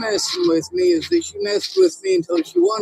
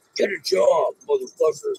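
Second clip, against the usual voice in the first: hateful, jeering delivery; 10 semitones lower than usual. Repeating a line after asking whether it needs more hate: with more hate. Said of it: "say it with more hate".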